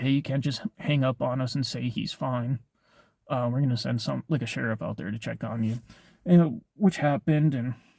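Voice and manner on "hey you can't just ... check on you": usual speaking voice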